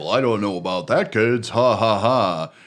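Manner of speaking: put-on creepy clown voice. Discussing early McDonaldland ads, the speaker imitates Ronald McDonald's creepy laugh. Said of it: "one where he laughs really creepy".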